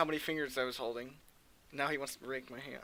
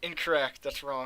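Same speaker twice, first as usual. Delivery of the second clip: plain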